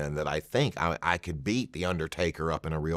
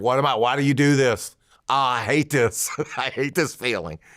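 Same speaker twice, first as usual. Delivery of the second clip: terrified, fretting, nervous, pitched-up voice; 7 semitones higher, 4 dB louder than usual. Retelling what he said near the curtain before matches: imitating his own nervous past self. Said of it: "I used to get terrified".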